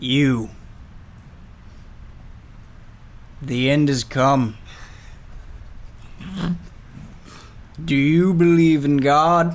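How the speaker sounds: changed, trance-like voice. A player voices a character speaking after his trance, in Spencer's trance voice. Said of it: "he has a different voice".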